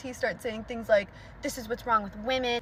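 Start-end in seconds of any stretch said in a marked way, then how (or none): none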